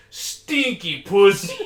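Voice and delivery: put-on thick Mexican accent, loud and high. Quoting a man who was telling him a story, in a thick mexican accent. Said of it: "just in like a thick, like Mexican accent".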